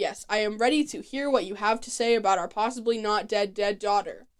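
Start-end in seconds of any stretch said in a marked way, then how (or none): none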